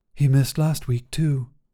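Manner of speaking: with a sigh. [name] remarks on Josh being absent from the group again; sighing. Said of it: "[name] sighed".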